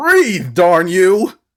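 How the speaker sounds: cartoonish voice, high-pitched and loud, yelling.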